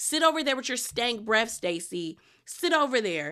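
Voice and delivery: plain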